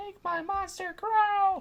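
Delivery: very high, drawn-out, stretched screech. Imitating the witch from Power Rangers calling out: screechy Rita Repulsa voice. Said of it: "their little fucking screechy voice of hers".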